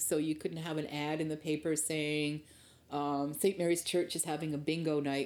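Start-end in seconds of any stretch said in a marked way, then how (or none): none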